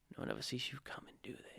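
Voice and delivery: very quiet, breathy whisper, barely audible. Retelling a film scene where the policeman speaks in someone's ear: imitating a whisper. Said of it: "he whispers it in his ear".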